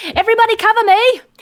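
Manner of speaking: shrill, very high, loud yell. Calling out in character for the others to cover: yelling. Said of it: "I'm gonna yell out".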